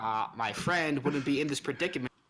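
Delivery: very bitter, sour, begrudging tone. In a role-play game, replying to another player while playing a bitter character. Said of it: "playing a very bitter character".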